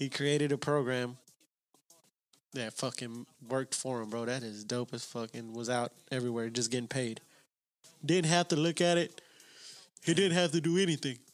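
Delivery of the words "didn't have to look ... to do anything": yawning while talking, higher. Chatting about a man who got paid by his own program, yawning while talking. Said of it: "I'm fucking yawning".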